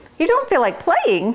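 very high-pitched exclaiming voice. The mouse answers the cricket Chester, exclaiming. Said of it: "the mouse exclaimed".

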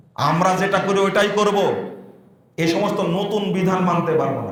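ordinary talk, nothing marked

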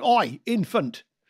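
put-on loud, high bellow in a strong Northern accent. Recalling a teacher with a strong Northern accent calling to pupils, retelling his Northern shout. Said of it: "quite strongly Northern accent? And he would shout".

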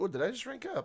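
very high voice, cracking and breaking. Streamer doing a second character during a game, voice cracking. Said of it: "My voice cracks".

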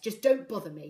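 loud, sharp, snapping retort. A father, shuffling papers at his desk, answers his daughter, snapping. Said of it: "Corvus snapped".

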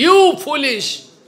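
high, loud, slow angry shout.

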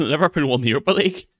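fast delivery with laughing and giggling.

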